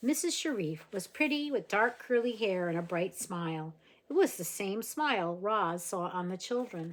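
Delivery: plain reading voice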